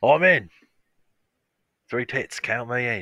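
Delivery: very loud, high-pitched, belted-out voice. Imagining an actor's reaction to a movie remake: Colin Farrell impression. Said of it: "the best impression I've ever heard".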